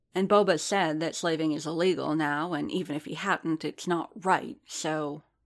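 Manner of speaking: ordinary delivery, nothing marked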